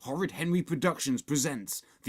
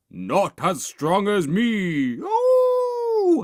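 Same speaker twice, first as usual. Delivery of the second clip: very loud, very slow, boastful, drawn-out werewolf howl; 7 semitones higher, 9 dB louder than usual. Narrator reading a story voices the werewolf leaping from behind a tree stump, howling werewolf. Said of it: "howled the werewolf, / howled the werewolf".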